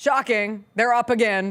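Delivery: condescending, patronizing, talking-down tone. Reporting Super Bowl ratings to the other speaker, condescending tone. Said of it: "You say shocking kinda condescendingly".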